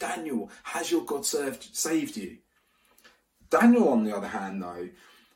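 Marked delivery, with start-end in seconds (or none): 0.0-2.4 put-on anguished cry, called out. Retelling an early-morning call out after a sleepless night: imitating an anguished call. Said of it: "an anguished voice calls out".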